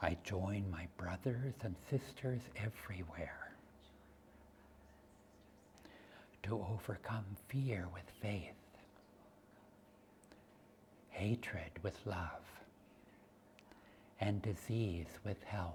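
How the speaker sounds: very hushed, soft, steady whisper. Leading a spoken affirmation that others repeat: whispering. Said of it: "Let's do this in a whisper".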